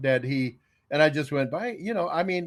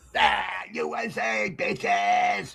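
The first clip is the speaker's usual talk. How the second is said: very drawn-out, creaky, rough put-on cheering yell; 5 semitones higher than usual. Retelling own habit of yelling U S A: imitating own patriotic yelling. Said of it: "I'm yelling U S A and all that stuff".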